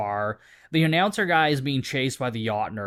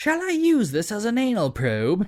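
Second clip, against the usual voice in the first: put-on stuffy British accent, higher; 8 semitones higher than usual. Recapping a scene, the speaker quotes Donnie holding a water gun, in Donnie's British accent. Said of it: "says in a British accent".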